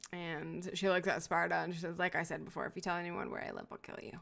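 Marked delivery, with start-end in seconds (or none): 2.0-4.2 playful, joking, teasing tone. Voicing a character warning another not to tell where she lives: poking fun. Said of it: "you hear in the tone of her voice that she is, like, poking fun".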